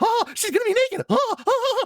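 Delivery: voice pushed way up high. Complaining about a commentator's remarks, imitating Jerry. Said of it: "that was a really good impression".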